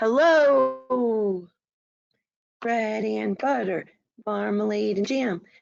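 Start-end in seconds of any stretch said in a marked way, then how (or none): 0.0-1.5 big, loud, high-pitched shout. Leading a call-and-response rhyme, saying hello as loud as we can: shouting hello. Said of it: "Let's say hello as loud as we can".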